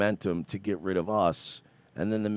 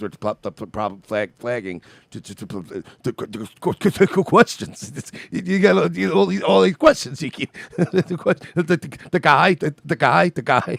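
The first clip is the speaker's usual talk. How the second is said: mock stammer, pitched much higher; 7 semitones higher, 9 dB louder than usual. Mocking a woman who stammered through her answer; imitating a stammer. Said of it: "that's why she hit that stammer. She was like".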